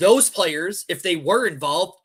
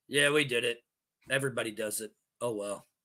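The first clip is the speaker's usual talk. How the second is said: very deep, slow coach voice; 7 semitones lower, 8 dB quieter than usual. Giving a coach words to shrug off cheating: imitating Belichick. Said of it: "here's my invitation to Belichick".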